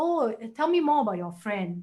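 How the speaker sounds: plain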